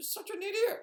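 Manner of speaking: bad, very high, squeaky cartoon mouse voice. Showing another way to say the insult, in a Mickey Mouse voice. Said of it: "you could do it like a Mickey Mouse".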